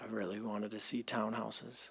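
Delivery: very quiet, low mumbled voice. Giving a comment in a meeting discussion: mumbling. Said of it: "I was kinda mumbling there".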